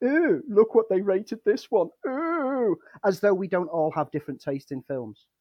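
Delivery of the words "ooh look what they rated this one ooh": loud, pitched-up, jeering, mocking taunt. Retelling an internet troll's taunt: imitating a mocking troll. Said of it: "go trawling through your letterboxed history".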